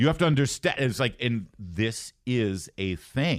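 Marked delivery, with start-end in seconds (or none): 0.0-0.8 put-on thick Jamaican accent, higher pitch. Retelling what a coworker would say during breaks: imitating a thick jamaican accent. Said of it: "she has this really thick Jamaican accent".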